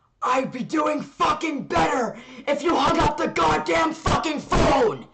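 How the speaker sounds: high, shrill, full-throated all-out screaming outburst. Retelling her reply to a caller on the phone, reenacting a scream. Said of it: "I screamed this, right like this".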